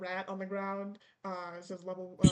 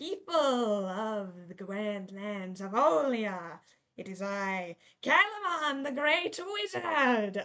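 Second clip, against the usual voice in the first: slow, sinister, wicked evil wizard villain voice; 4 dB louder than usual. Voicing a wizard who announces himself to a crowd: villain wizard voice. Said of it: "you hear, uh, a wicked laugh".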